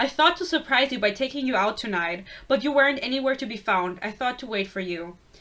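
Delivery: ordinary delivery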